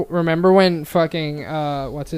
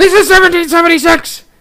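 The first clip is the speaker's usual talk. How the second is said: mock screaming rant, much higher, louder; 13 semitones higher, 10 dB louder than usual. Joining a friend's bit, screaming Alex Jones impression. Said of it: "a little louder and just like screaming".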